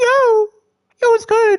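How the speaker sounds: very high, cringy, corny voice. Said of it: "that is my corny voice".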